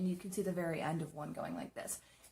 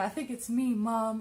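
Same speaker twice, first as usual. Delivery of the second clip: loud, slow, acted, tearful weeping; 4 semitones higher, 7 dB louder than usual. Retelling calling Mom after a scare: imitating own past crying. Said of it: "And I'm crying".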